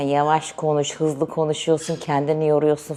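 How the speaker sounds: ordinary talk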